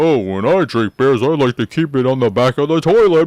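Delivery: loud, deliberately dumb, silly, stupid-sounding voice. Retelling how Chloe picked up the bottle and spoke, imitating Chloe's stupid voice. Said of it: "says something stupid in a stupid voice".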